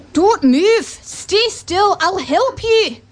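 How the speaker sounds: attempted Scottish accent. Narrator reading a story, a man helping a boy stuck in mud, Scottish accent. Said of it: "I won't do a Scottish accent. Actually, no, I'll try".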